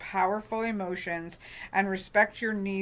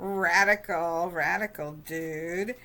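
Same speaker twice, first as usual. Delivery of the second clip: put-on surfer dude voice. Speaker voices a phrase the way they hear it, in a surfer dude voice. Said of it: "hear them in my head with a surfer dude voice".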